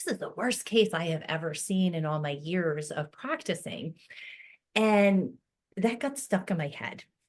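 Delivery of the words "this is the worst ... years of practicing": normal talking voice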